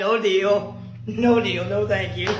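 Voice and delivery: normal talking voice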